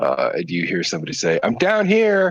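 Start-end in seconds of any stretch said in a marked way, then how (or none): 1.4-2.3 put-on faint, very high-pitched girl's voice. Voicing someone calling from inside the cave: high-pitched woman's voice. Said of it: "it's high-pitched voice".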